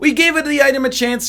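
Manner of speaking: put-on fake Italian accent, very high pitched. Speaker recapping a run and an item choice, in a fake Italian accent. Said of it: "I said it in like a fake Italian accent".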